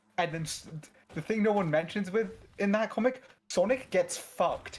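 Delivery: ordinary delivery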